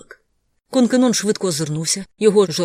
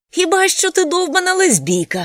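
very high, laughing hard, guffawing through the words; 12 semitones higher, 4 dB louder than usual. Konkenon keeps needling Navin Adeir, laughing hard. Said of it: "регочучи так сильно".

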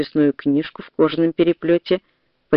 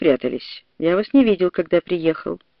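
plain reading voice

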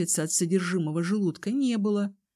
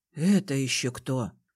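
muttering under breath, much lower, slower; 6 semitones lower than usual. The healer hears a new voice calling for help in the corridor, muttered under his breath. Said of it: "пробормотал лекарь себе под нос".

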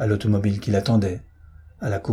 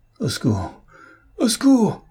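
very high, shrill, rasping cry under strain; 12 semitones higher, 5 dB louder than usual. Dobrec, held as his bones crack, struggles to break free, hoarse cry for help. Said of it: "Articula Dobrec d'une voix rauque".

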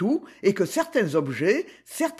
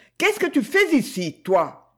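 dry, cutting, curt and sharp, pitched up; 6 semitones higher than usual. A woman stops at the library doorway and addresses someone inside, curtly. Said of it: "en disant sèchement".

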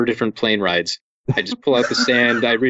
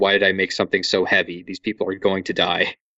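put-on remorseful voice; 3 semitones lower than usual. Acting out an author talking about his own heavy books, imitating a remorseful Neil Gaiman. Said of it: "you can hear the remorse in his voice".

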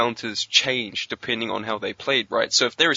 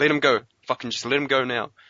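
imitated aggressive muttering. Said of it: "the swearing, super aggressive, they're muttering".

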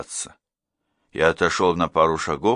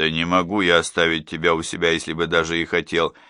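ordinary delivery

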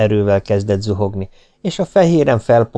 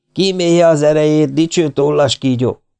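high, jeering, mocking shout; 6 semitones higher than usual. A young man calls after a man forced into the water, mocking shout. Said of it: "kiáltotta utána a fiatalember gúnyosan".

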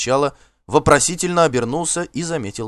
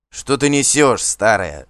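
irritated, annoyed shouting; 4 dB louder than usual. A man, fed up with a nagging old woman, snaps back, irritated shout. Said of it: "Раздраженно крикнул Асфальт".

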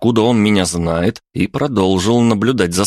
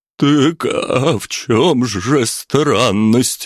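trembling, frightened voice shaking with fear; 3 semitones higher than usual. The cook asks a question while being questioned in a cellar, trembling voice. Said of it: "дрожащим голосом спросил".

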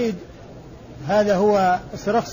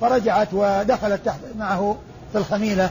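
ordinary talk, nothing marked

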